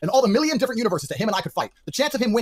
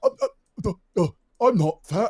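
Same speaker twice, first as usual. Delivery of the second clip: slow, stammering stutter, drawn-out uhs, stumbling. Imagining Ethan Klein losing a live debate: Ethan Klein stammering impression. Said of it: "just stand there and get annihilated".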